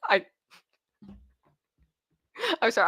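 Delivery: talking through bursts of laughter, swooping pitch. Reacting to a viewer's Benadryl comment, laughing while talking. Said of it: "I'm just laughing because".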